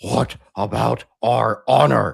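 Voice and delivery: drawn out with a rough rasp. Showing how a Klingon character first says a line, imitating Jaden the Klingon's delivery. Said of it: "He says it like this".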